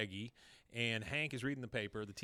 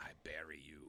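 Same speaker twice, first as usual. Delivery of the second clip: low, soft whisper under the breath. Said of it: "Min under her breath says".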